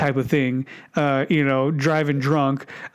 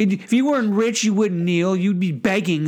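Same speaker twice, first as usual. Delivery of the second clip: nagging, whiny, high-pitched ranting tirade; 5 semitones higher than usual. Mocking a cable news pundit's rant at Colin Kaepernick: imitating Tomi Lahren whiny yelling. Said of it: "whiny yelling".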